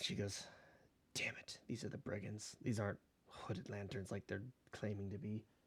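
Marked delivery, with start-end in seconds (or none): 1.1-5.4 muttering under breath, much quieter. Storyteller voicing a woman answering a gold toll demand, muttering under her breath. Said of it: "She mutters to, under her breath".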